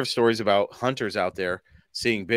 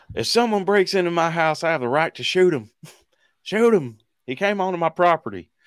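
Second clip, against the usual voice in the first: corny, put-on Southern drawl, pitched up; 8 semitones higher, 3 dB louder than usual. Mocking people who defend shooting intruders, attempted Southern accent. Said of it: "if that's supposed to be a Southern accent".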